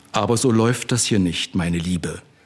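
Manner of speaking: ordinary delivery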